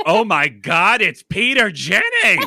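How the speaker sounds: shrill, booming, swooping, very loud high-pitched outcry. Retelling what a chaperone said loudly enough for the man to hear: imitating a very loud exclamation. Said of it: "just goes very loudly".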